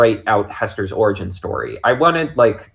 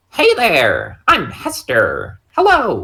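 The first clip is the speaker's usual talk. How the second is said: pitched-up, sing-song, swooping, drawn-out character voice; 5 semitones higher than usual. Showing the voice used for the puppet character Hester: Hester's character voice. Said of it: "a very character voice of".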